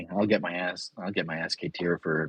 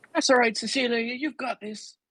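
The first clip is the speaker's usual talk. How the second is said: put-on, badly done Irish accent. Voicing a character who announces something out loud, in a bad irish accent. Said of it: "Is that a bad Irish accent?".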